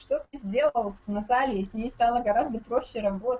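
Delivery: ordinary talk, nothing marked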